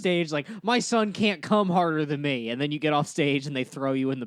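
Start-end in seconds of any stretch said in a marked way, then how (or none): 0.6-2.5 upset-sounding delivery. Imitating the other speaker's stand-up joke on stage: imitating an upset delivery. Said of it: "You just said it like I'm upset".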